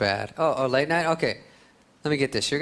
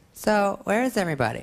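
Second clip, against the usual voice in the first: put-on pitched-up high-school teen girl voice; 7 semitones higher than usual. Doing an impression of a girl invited to a party. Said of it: "my impression of a girl in high school".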